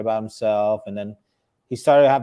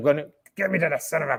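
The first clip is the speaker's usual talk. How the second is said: put-on angry yelling voice, higher in pitch; 5 semitones higher than usual. Retelling a wrestling clip: imitating his angry voice. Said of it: "his voice".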